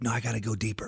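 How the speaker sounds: frantic, urgent whisper. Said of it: "I'm like".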